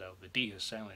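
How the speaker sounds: ordinary delivery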